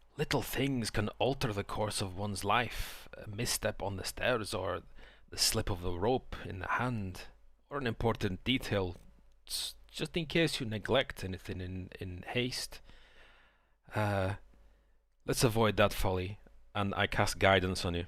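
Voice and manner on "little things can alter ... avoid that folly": close-in, soft, hushed stage whisper. One player's character leans in before a stealth mission, half-whispering in someone's ear. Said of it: "I just non-creepily whisper in your ear".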